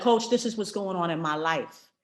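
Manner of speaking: usual speaking voice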